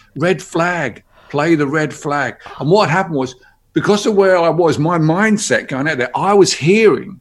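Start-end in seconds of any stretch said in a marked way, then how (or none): 0.1-2.3 imitated call, stretched long, slow and held back. Retelling a heckler's call from the crowd: imitating a shout at full volume. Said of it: "he shouted at the top of his voice".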